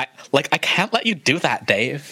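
put-on Valley Girl accent. Imitating Hal quoting a film line: Hal 9000 in a Valley Girl accent. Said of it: "a Valley Girl accent".

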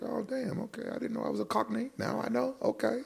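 very high, baffled, resigned reaction.

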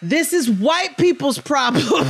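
mock fired-up, heated, high-pitched yelling. Retelling yelling at the TV with wine: retelling own screaming. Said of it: "And I was screaming that".

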